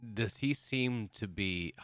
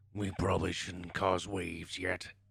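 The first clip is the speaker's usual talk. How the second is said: rough, creaky growl. Speaking in character in a game, urging caution: growling. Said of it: "kinda growls and says".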